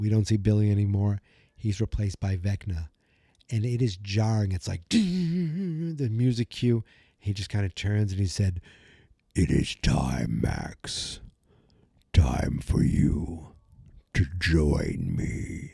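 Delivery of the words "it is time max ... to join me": very deep, rough growl, dragged out. Retelling a TV scene where the villain speaks to Max: Vecna voice. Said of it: "Just try doing a little voice".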